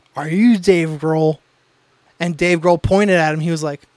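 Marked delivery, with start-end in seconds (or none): 0.2-1.4 put-on drunk slurring. Retelling their 21st birthday, the speaker imitates a coworker: imitating Brian's drunk slurring. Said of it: "my coworker Brian was like slurring".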